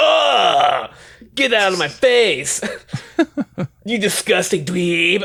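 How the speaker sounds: high voice with long, drawn-out "ugh". Retelling what Larry says to someone: imitating Larry. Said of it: "Larry's like".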